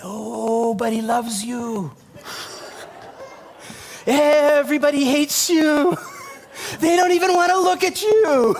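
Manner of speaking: put-on small, high-pitched little-kid voice. A parent acts out the words of their younger son, in a little child's voice. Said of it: "We hear another little voice".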